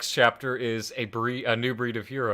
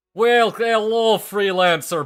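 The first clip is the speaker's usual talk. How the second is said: bad, fake Russian accent, higher and louder; 10 semitones higher, 9 dB louder than usual. Greeting a freelancer in a bad Russian accent. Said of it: "Bad Russian accent".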